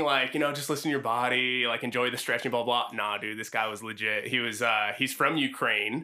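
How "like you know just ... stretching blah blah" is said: normal talking voice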